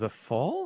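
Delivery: rising question intonation on fall. Mimicking how someone else said the words, like a question mark: rising question on fall. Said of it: "question mark, like you said it?".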